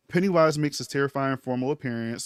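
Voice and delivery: ordinary delivery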